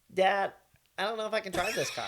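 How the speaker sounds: very high-pitched voice. Asked to act out a son's words to his dad: imitating his son's voice. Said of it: "use his voice and his face".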